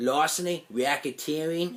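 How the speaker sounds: fake, put-on New York accent. Mocking an Australian actor's put-on New York accent. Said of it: "he does this New York accent. He goes".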